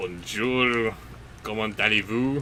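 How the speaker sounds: French spoken with Russian accent. Challenged by the host to speak French, French with Russian accent. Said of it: "Speak French with a Russian accent".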